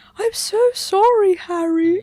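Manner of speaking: very high, loud, squeaky, pitiful voice. Discussing how they portray Ron, the speaker mimics him: imitating Ron's high pitiful voice. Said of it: "Ron just having that high pitch".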